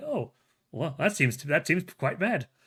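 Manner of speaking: put-on smug indifference. Recapping a story where bullies try to scare him, imitating his mock-smug unfazed reply. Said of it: "he has this dickish smug aura to him".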